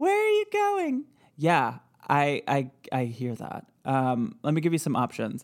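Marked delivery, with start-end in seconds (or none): 0.0-1.0 very high, tiny ghost voice. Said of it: "a real tiny little voice".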